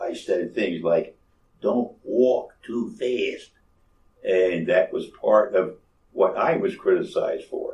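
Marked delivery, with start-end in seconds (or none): 1.6-3.5 put-on heavy, thick Philadelphia accent. Recalling how he talked as a young recruit, the speaker quotes himself; thick philadelphia accent. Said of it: "I had a thick Philadelphia accent".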